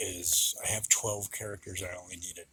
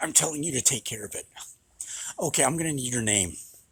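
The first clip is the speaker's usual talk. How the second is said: mean, pushy, raised, shrill, demanding voice; 6 semitones higher, 6 dB louder than usual. Acting out a customer demanding staff deal with a dog: imitating a mean customer. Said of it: "keeps getting meaner and meaner".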